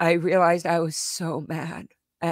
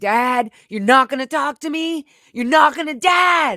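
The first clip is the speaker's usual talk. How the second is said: full-on raised, pitched-up yell; 8 semitones higher, 7 dB louder than usual. Retelling what was said to a parent who ignored them: imitating own yelling. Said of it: "I yelled".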